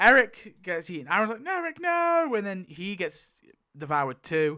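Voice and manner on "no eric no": very high, shrill screaming cry. Retelling a story scene where Aaron sees Eric devoured: imitating Aaron screaming. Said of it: "Aaron's screaming".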